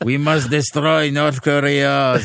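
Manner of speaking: slow, weak, poorly faked American accent. In a French conversation about North Korea, a bad Donald Trump accent. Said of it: "C'est pas un très bon accent de Donald Trump".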